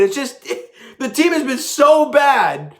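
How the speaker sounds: speaking with laughter breaking through the words. Recapping a lopsided win, laughing while talking. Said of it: "I'm sorry I'm laughing".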